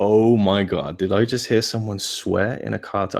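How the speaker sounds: ordinary talk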